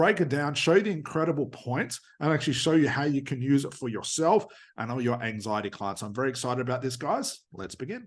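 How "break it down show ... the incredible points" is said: ordinary delivery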